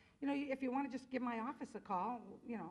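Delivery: ordinary talk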